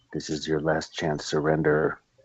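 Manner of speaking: fast whisper. A player's character whispers in a badly hurt foe's ear: whisper. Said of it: "I'm gonna whisper in his ear".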